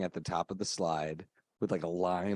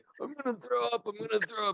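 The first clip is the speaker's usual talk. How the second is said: very high, raspy, scratchy voice. Retelling a sibling's childhood words before throwing up: imitating a scratchy voice.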